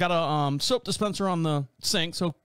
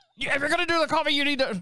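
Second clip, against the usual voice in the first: put-on very high ranting yell like an old man; 9 semitones higher than usual. Retelling a coffee-maker argument with dad: imitating dad yelling like Alex Jones. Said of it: "I don't know why he sounds like, uh, Alex Jones".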